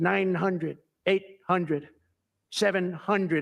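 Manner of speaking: slow, mechanical, robotic computer voice. Retelling a plane landing, voicing the plane's computer in a robotic computer voice. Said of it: "I call it the computer voice".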